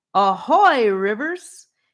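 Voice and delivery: loud, dramatic, theatrical stage voice. A voice answering a greeting called toward the tree, theatrical voice. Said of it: "Came a theatrical voice back".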